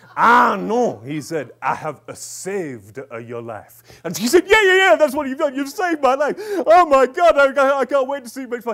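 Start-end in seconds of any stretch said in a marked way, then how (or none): 0.2-3.9 bad fake French accent, slower. Retelling what a French facilitator said to a woman, in an awful French accent. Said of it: "he spoke in a really awful French accent".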